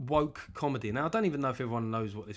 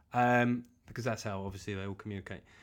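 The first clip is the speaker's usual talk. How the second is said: usual speaking voice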